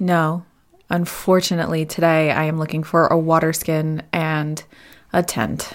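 deeply sad, mournful, very slow, every word dragging. Speaking in character to a merchant at a market stall: very sad. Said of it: "She sounds very sad about this".

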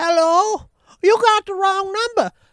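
put-on little lady voice, pitched way up. Retelling answering a wrong-number caller asking for Gary: little lady voice. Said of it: "I was doing this little lady voice".

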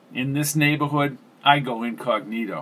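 plain reading voice

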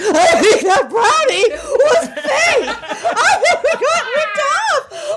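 put-on loud, shrill, blaring stoned voice. Retelling what a very high woman said, imitating her stoned voice. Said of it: "she said it like this".

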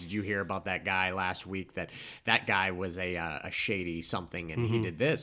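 ordinary delivery

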